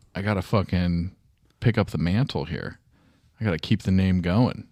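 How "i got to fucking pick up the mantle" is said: usual speaking voice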